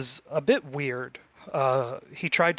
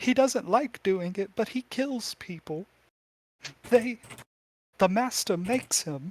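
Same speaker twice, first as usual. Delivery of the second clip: put-on high, frightened, pleading, terrified girl's voice; 6 semitones higher than usual. Voicing a girl who hears chains rattling above: terrified girl's voice. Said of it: "She looks so terrified".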